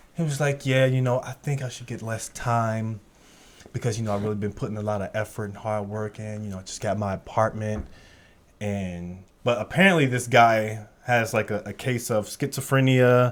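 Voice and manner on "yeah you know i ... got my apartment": soft, calm, pleading delivery. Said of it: "dude was sitting there calm, pleading his case".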